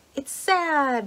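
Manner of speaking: cheerful, upbeat tone. Quoting her answer in a category game: mock-cheerful, opposite of sad. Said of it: "she said in the opposite voice of sad".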